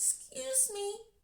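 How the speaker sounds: put-on very high, hushed, soft little-old-lady voice. Retelling how a little old lady interrupted the speaker: little soft voice. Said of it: "with a little soft voice".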